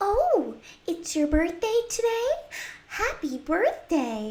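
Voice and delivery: very high-pitched storybook princess voice.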